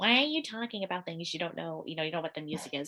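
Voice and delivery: ordinary talk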